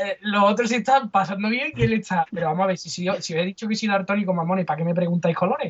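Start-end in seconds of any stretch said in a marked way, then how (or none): none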